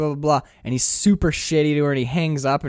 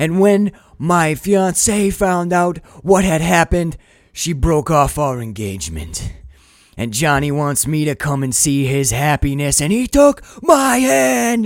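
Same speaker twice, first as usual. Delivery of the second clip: play-acted, huge, all-out screaming rant; 5 dB louder than usual. Retelling a movie scene, imitating Nicolas Cage screaming. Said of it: "And he's screaming".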